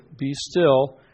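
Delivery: ordinary delivery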